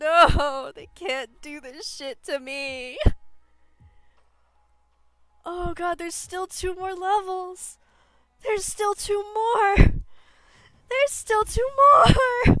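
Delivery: on the verge of tears. Reacting while playing a game, almost crying. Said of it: "I'm almost crying".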